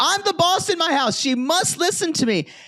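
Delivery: voice pushed very high up, thin. Retelling what a man said in an argument: Raj's high voice. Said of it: "because his voice is kind of high".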